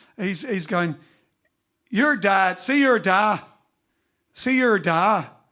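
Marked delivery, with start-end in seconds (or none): 1.9-5.2 slow, imperfect put-on Northern Irish accent. Retelling a story told by a jazz player: imitating a northern irish accent. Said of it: "I can't do the accent properly".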